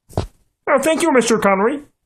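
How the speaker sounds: frog puppet character voice. Thanking the other panelist for the defense: Kermit the Frog voice. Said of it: "you're welcome, Kermit".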